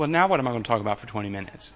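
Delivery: mock dismay, very low, soft, hushed, teasing. A speaker responds to an audience member's comment, teasing. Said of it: "I'm teasing".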